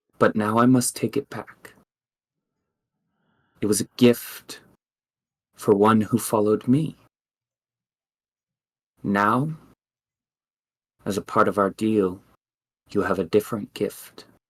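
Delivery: rustling voice like leaves stirring underfoot. A spirit speaks inside a listener's mind, in a voice like fallen leaves. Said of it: "She says, / and you hear inside your mind a voice like fallen leaves, / and you hear inside your mind a voice like fallen leaves".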